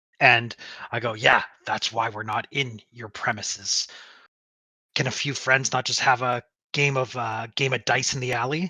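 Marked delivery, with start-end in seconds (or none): 1.1-8.7 annoyed, irritated tone. Answering in character someone who says the premises are closed: annoyed. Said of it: "look annoyed at that he's asking me".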